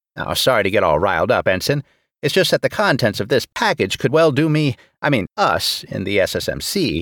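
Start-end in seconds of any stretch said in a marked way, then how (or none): none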